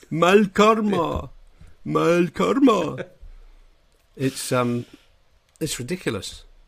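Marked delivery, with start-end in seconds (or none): 0.1-3.0 high, slow, drawn-out, exaggerated cartoony voice. Showing how the Catalan dub of Neil sounds: cartoony Neil voice as dubbed. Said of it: "this completely different cartoony voice".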